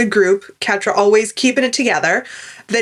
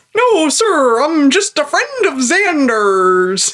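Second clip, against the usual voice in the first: fake, put-on American accent; 4 semitones higher than usual. Recalling a favorite TV scene, a co-host quotes Spike in his fake American accent. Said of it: "does his fake American accent".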